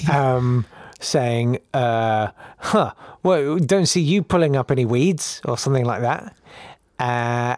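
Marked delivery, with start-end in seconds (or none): 2.6-5.4 sarcastic, snarky, dismissive little jab in tone. Retelling a letter from a game character Dizzy, imitating a snarky letter. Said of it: "a bit snarky".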